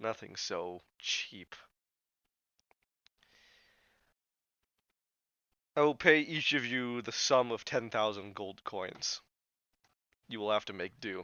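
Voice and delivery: low, soft, worn-out, tired, weary voice. Game master voicing a character who looks at the players, tired voice. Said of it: "in a tired voice".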